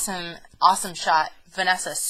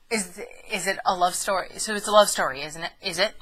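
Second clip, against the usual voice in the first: ordinary talk, nothing marked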